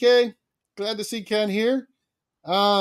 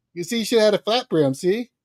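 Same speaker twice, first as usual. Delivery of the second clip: ordinary delivery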